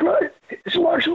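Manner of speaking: put-on short breathy gasps. Retelling a phone call: imitating a man taking little breaths. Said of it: "I did the voice that this guy had".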